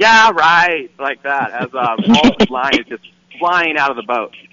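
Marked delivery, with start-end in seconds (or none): 0.0-0.9 high, raised yell. On the boat with a fish on, imitating John yelling back. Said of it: "he yelled".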